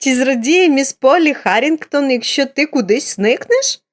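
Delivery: high-pitched exclamation spoken through laughter. Narrating a character answering a child's question, exclaiming with a laugh. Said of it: "вигукнула зі сміхом".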